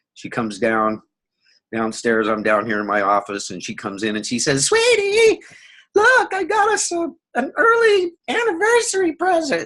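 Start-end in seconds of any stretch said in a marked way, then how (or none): 4.7-9.7 shrill, squeaky voice pitched very high. Retelling what his wife said coming into his office, squeaky, high-pitched voice. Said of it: "she's got this real squeaky, high-pitched voice".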